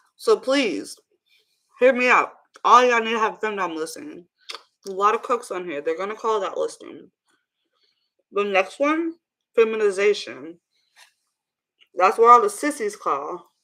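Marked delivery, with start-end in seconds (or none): 8.3-13.4 speaking with mouth full, chewing. Speaker recommending site listings to viewers while eating, talking with mouth full. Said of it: "I usually don't talk with my mouth open with food in my mouth".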